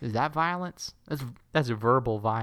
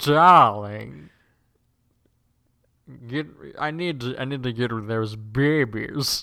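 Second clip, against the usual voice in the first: upper-class British cartoonish voice; 7 dB louder than usual. Asked for their best Nigel Thornberry impression, the speaker does a Nigel Thornberry impression. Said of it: "let's hear your best Nigel Thornberry impression".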